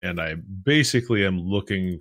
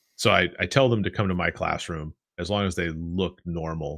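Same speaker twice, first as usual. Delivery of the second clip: plain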